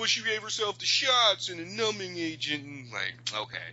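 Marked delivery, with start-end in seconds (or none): 0.0-2.6 high, mocking put-on voice. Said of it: "And they're like".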